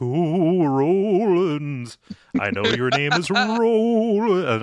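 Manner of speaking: weird, eerie ghost voice, very high and very slow. Describing an audiobook narrator's voice, demonstrating a weird ghostly voice. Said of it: "when I say ghostly, I'll be like".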